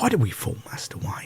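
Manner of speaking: breathy, near-whispered delivery. Doing a Michael Caine impression of a movie line. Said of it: "Michael Caine".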